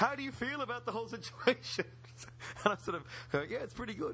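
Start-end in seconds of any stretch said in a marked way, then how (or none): 0.0-1.8 put-on eager, breathless, excited, pitched-up voice. Retelling an interview call about Doctor Who, imitating a breathless, excited Spencer Howson asking you a question. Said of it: "a breathless and excited Spencer Howson going".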